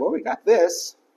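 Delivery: high, sarcastic, mocking tone. Retelling what the kid with the fish said to Jesus, sarcastically.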